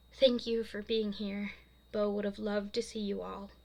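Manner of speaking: plain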